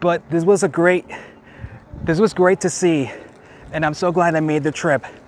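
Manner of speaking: out of breath. On a day trip from Las Vegas, out of breath. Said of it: "I am out of breath".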